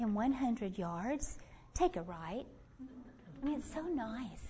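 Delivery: hushed, soft, sweet navigation-system voice. Describing GPS directions, imitating the device's sweet GPS voice. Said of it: "it's this real sweet voice".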